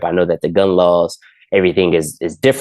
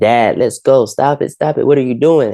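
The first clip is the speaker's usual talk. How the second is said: high-pitched, sobbing, hysterical crying, begging tone; 7 semitones higher than usual. Retelling a confrontation, quoting a man's teenage daughter, imitating hysterical crying. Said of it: "she's crying, she's hysterical".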